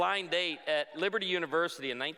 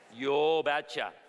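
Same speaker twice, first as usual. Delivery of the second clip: put-on heavy, laid-on, thick Norwegian accent; 3 dB louder than usual. Retelling a man's reply to the speaker's condition: thick Norwegian accent. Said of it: "in his thick Norwegian accent".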